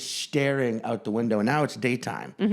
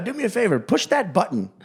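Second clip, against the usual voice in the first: terrible put-on British accent, pitched up; 7 semitones higher, 4 dB louder than usual. Acting out what a flight attendant asked a passenger, in a deliberately bad British accent. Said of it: "terrible uh, British a- or Australian accent".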